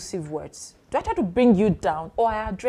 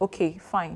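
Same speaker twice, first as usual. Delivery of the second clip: put-on cold, aloof voice, quieter; 2 semitones lower, 5 dB quieter than usual. Retelling a partner's reply to a friendly greeting: imitating an aloof partner. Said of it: "my partner not happy and being aloof".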